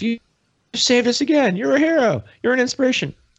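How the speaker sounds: very high, shrill, loud yell from afar. Speaker acts out what someone yelled off at him: retelling a yell. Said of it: "someone yells off".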